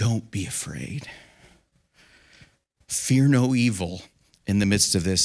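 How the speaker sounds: soft, hushed, half-whispered words. Voicing what he half-whispers to those who are afraid, half-whispering. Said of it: "he just whispers and says".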